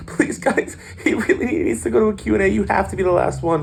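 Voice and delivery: very high, weepy, tearful pleading voice. Retelling a handler's plea at an autograph line: imitating a crying pleading handler. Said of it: "handler was, like, sweating and crying".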